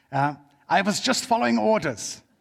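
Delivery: put-on German accent. Quoting a phrase the speaker always says with a put-on Nazi accent. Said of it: "I always have to say it with a Nazi accent".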